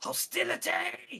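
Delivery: creepy, very high creaky voice. As the players step forward, the Bonarch speaks in a very creepy voice. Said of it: "In a very creepy voice".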